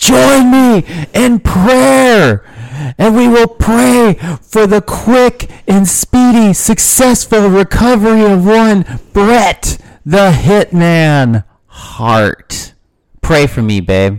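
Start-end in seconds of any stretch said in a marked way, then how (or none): 0.0-12.7 raspy, swooping, swinging, very high voice. Imitating a wrestler leading a prayer: Brian Pillman impression. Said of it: "I gotta work on my Brian Pillman".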